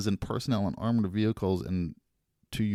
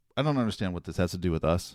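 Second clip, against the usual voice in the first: usual speaking voice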